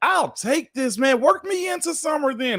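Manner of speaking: high, eager, excited shout. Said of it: "And I'm like".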